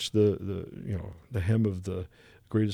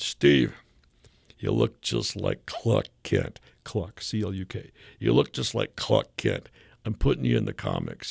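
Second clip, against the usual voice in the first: put-on Bronx accent voice. Retelling what his old editor said on an escalator, doing Julie Schwartz's voice. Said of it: "and I'm gonna do Julie's voice".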